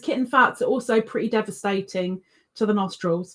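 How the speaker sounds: ordinary talk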